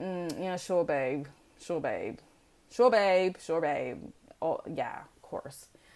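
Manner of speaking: heavy, play-acted sarcastic agreement, audibly disbelieving. Imitating people who doubt you, imitating sarcastic people. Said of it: "not be saying it as sarcastically as I am".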